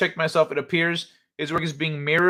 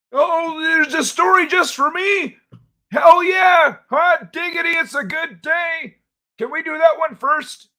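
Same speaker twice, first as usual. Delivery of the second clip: put-on very high, loud, excited old man voice; 14 semitones higher, 5 dB louder than usual. Switching into an old man character to react to a story, old man voice. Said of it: "old man [name] will be here".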